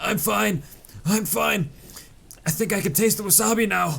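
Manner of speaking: put-on very high voice spluttering through coughs. Retelling a friend eating wasabi: imitating a friend coughing. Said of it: "He's coughing and saying".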